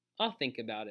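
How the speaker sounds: plain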